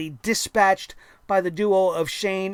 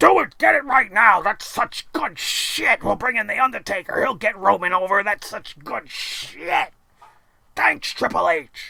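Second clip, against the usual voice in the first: put-on big-boss character voice, approving. Acting out Vince McMahon answering Triple H in his office: Vince McMahon impression. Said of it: "I'm mixing my voices".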